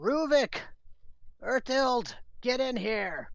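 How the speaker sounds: shrill, very high-pitched, loud yell. Voicing a dwarf-looking creature calling others in during a fight: yelling. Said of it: "he yells".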